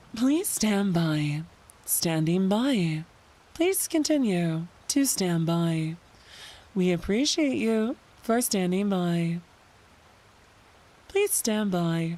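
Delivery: low, slow automated AI assistant announcer voice. Asking chat whether they sound like ai, doing an ai assistant voice. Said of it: "do I sound like A I?".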